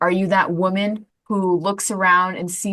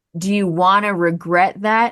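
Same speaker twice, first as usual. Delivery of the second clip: plain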